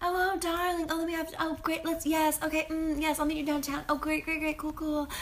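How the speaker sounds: high-pitched, prim, proper, posh chattering voice. Describing a social scene to a listener, mimicking everyone there in a prim and proper voice. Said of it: "everyone is like prim and proper".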